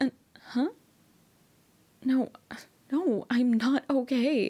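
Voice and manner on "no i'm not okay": scared, frightened tone. Talking to babe after the scenic route went wrong: scared. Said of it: "I'm scared. My hands are shaking".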